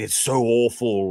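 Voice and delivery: put-on Scottish accent. Mocking a movie reviewer's constant complaints: imitating Critical Drinker's Scottish accent. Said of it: "in his Scottish accent, obviously".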